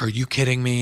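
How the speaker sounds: put-on panicked outburst. Retelling a producer's phone call caught on a mic: imitating someone freaking out. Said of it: "she starts freaking out".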